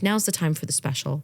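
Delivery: ordinary talk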